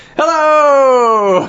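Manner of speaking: high, loud, belted announcer voice.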